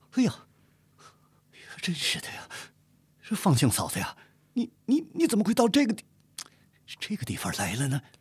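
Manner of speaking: trembling, quavering voice. Narrator reading a novel voices a character's line in a trembling voice. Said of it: "颤声说道".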